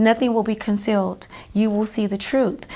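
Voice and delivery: ordinary talk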